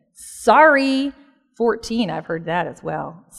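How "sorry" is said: high, drawn-out, grudging, insincere delivery. Imitating a child's apology said without meaning it: mock-insincere 'sorry'. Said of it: "they can say it like they don't mean it".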